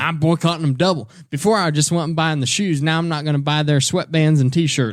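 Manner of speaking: Southern small-town voice. Joking about boycotting a brand: Southern accent. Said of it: "I do that Southern accent whenever I say stuff like that".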